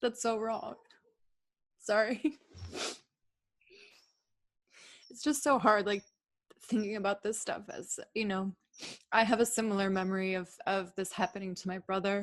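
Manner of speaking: near-tears voice. Speaker moved by the other's painful memory shares a similar one; tearful voice. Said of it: "you're making me cry".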